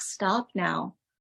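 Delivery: plain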